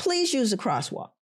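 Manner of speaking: mild mock yell. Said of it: "And he yells at them".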